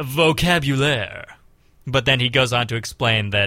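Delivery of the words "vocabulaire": sultry, seductive, lingering put-on sexy voice. Retelling what a man said, turning to the camera, in his put-on sexy voice. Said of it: "he says in his sexy voice".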